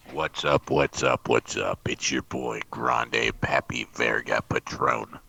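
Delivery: unusually dark, very deep, slow, rough voice. Opening a livestream greeting: unusually dark voice. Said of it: "Your voice got all really dark today".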